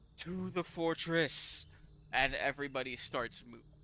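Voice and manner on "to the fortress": loud, pitched-up voice ringing out of a helmet. Narrating the scene, the speaker gives the helmeted figure a loud voice from a helmet. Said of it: "this loud voice that just says".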